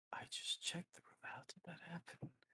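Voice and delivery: hushed, whispered mutter under the breath. Voicing a man who turns around before walking away, muttering under his breath. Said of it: "under his breath".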